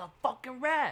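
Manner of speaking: mock, high-pitched screaming. Retelling a movie character screaming at the boss: imitating someone screaming. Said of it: "he's screaming at the".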